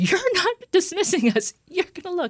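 very high, shrill yelling, pitch swinging wildly. Recounting an ER visit with Liam, the speaker retells their own yelling at the doctor. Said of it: "I was yelling at the doctor".

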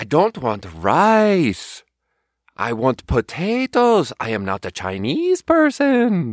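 put-on very slow, failed German accent, "rice" drawn out. Speaker retells a German guy's complaint about the dish in a bad German accent. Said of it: "I don't know how to do a German accent".

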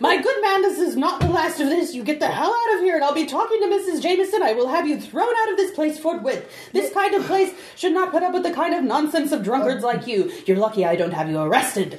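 high, fast, irate angry tirade.

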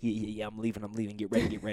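soft, mock sassy, smart-alecky taunt. Retelling leaving for the neighbors while his partner stays home: imitating his own smart-ass tone. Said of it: "the little smart assness in my voice".

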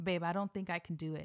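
mock whispering. Retelling whispering to a partner just before going on: imitating own whisper. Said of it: "I literally kept whispering to him".

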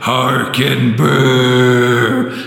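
eerie, haunting ghost voice, words drawn out. Introducing Story 5 of the Halloween comics: spooky ghost voice. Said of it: "I started doing it like a ghost".

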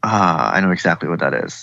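ordinary talk

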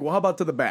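ordinary talk

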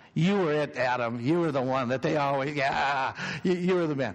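playful, good-natured teasing tone. Speaking to adam, teasing him. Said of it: "I'm teasing you".

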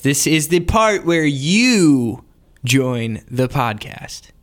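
salesman-like pitch delivery. Introducing the listener mailbag segment: salesman-y pitch. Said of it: "it sounded more salesman-y when I did it".

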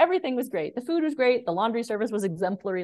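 high, mock wry, tongue-in-cheek sarcastic tone. Retelling dad's reply about his trip: imitating sarcastic praise. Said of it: "he's kinda saying it sarcastically".

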